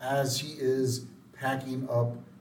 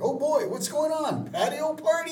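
mock excitement, very high and loud; 6 dB louder than usual. Telling a story about people knocking at the door, acting out excited Kurt. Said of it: "And Kurt gets all excited".

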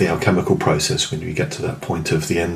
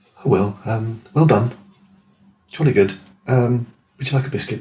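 mild, polite, gentle British voice, pitched up; 5 semitones higher than usual. Retelling how others responded to the speaker, imitating quiet, gentle british voice. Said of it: "quietly and gently, and in a very British way".

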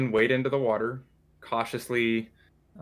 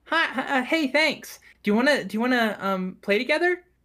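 put-on little elf girl voice, girlish. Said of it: "she goes".

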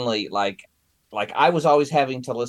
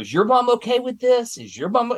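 play-acted, very high, shrill, angry yell; 13 semitones higher than usual. Retelling a woman yelling at Shelby after not being invited, retelling a yell. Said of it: "she was yelling at Shelby".

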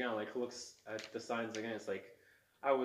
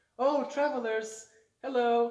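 put-on fairly young voice, very high and loud; 13 semitones higher, 11 dB louder than usual. The narrator voices a young elf calling to the travelers from behind, in a fairly young voice. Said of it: "you hear like a fairly young voice say".

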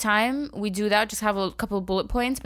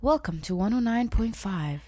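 radio dj announcer voice, much slower. Saying their podcast sounds like a radio show, the speaker puts on a radio dj voice. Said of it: "We sound like we're on a radio show".

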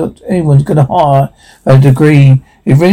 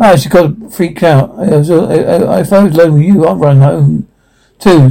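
plain

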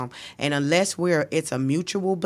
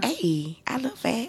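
sweet put-on cute girl voice, pitched up; 7 semitones higher than usual. Showing how to ask men if you look fat, cute girl voice. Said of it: "put your cute girl voice on".

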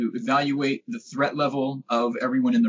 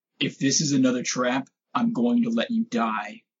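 acted whisper; 2 semitones lower than usual. Telling a story about an uncomfortable hug from a guy, retelling a whisper. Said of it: "I'm going to whisper into his ear".

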